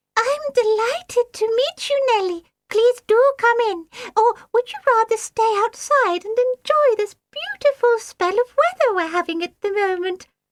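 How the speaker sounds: very high, shrill, piping little peeping voice. A water greep greets Nellie the monster sitter at the door, shrill, peeping voice. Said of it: "in a shrill, peeping voice".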